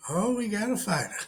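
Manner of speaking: high animated cartoon voice. Quoting a Family Guy scene: Mister Herbert voice. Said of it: "Mister Herbert, he's like".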